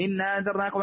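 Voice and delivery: ordinary talk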